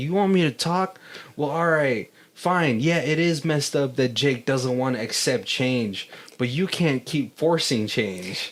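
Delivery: ordinary talk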